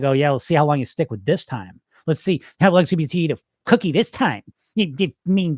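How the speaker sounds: nasty, mean, sneering, mocking tone. Describing the inner voice that mocks your diet, imitating a mean voice. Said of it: "it's this mean, shitty voice".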